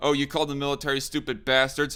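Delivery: normal talking voice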